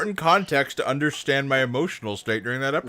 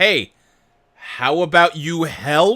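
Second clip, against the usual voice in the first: loud, drawn-out yelling; 3 semitones higher, 5 dB louder than usual. She stands across the courtyard, yelling at the other gods; yelling. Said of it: "she's just yelling at the other gods".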